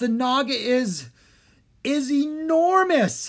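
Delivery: stammering, very high and very drawn out. Gasping as a huge yellow eye appears at the round door: stammering. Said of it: "he stammered".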